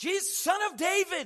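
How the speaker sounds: high, loud, desperate crowd hollering.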